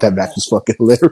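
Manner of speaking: talking through laughter. Talking about a funny match, apologizing for laughing: laughing while talking. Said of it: "I'm gonna keep laughing".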